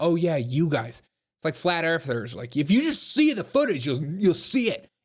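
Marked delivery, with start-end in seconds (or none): none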